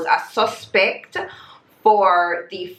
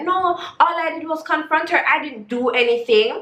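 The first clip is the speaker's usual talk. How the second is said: high-pitched, defensive protesting tone. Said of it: "Adele gets all defensive".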